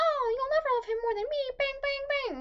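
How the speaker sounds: mock, very high, playful, jokey teasing voice. Recalling predicting a character's death, the speaker retells a joking remark.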